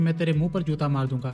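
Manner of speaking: ordinary delivery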